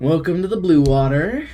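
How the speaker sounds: put-on southern drawl accent. Voicing an innkeeper greeting guests: Southern accent. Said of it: "that's the Southern".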